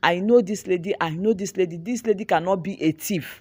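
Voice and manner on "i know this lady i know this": usual speaking voice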